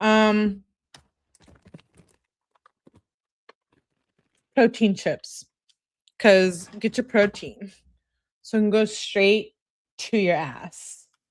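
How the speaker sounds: speaking with mouth full. Speaker apologizes to listeners for eating while talking; talking while chewing. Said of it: "Sorry while I'm chewing your ear".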